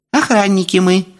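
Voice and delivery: very high, thin, squeaky little voice. Narrator reading, a glass vial answering the question put to it: thin squeaky little voice. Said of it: "тонким голоском пискнула склянка".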